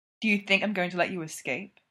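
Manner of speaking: plain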